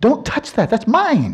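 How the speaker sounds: very high, aggressive, in-your-face possessive tone. Giving an example of in-your-face reification, aggressive possessive tone. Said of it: "really in your face ... it was mostly the tone of voice".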